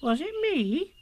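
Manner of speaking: very high, mildly startled, a little surprised. Narrator reads a character asking after being reproached, a little surprised. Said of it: "a little surprised".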